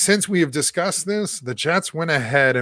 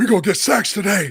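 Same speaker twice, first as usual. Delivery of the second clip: put-on very old, preacher-style, puppet-like old-man voice; 4 semitones higher, 3 dB louder than usual. Imitating a football player talking about a tax break: Calais Campbell impression. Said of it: "best Calais Campbell impression".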